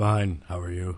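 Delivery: deep, quiet voice. A guest answers the host's greeting, in a deep voice. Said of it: "Thank you for the deep voice".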